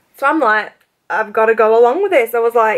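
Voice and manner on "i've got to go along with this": usual speaking voice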